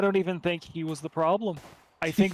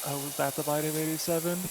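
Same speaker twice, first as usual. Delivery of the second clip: utterly bored, flat, deadpan monotone; 4 dB quieter than usual. Retelling own remark while watching a horror movie, mock-bored flat voice. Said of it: "in the most like bored voice".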